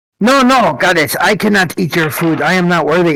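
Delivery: put-on goblin voice. Role-playing a character who speaks in Goblin first, goblin voice. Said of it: "I'm going to say in Goblin first".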